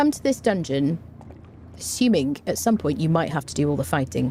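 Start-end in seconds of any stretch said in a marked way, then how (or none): none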